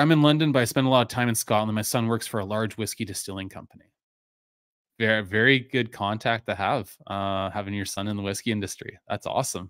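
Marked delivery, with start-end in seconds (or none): none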